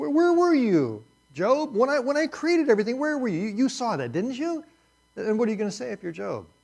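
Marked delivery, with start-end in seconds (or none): 0.0-4.6 sarcastic, swooping and high-pitched. Acting out God questioning Job: God speaking sarcastically. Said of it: "you feel the sarcasm just dripping off of this".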